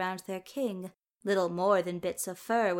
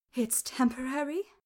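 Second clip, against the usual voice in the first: voice wavering with relief, much higher pitch; 5 semitones higher than usual. A woman answers the explanation about him; voice wavering in relief. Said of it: "The woman's voice wavered in relief".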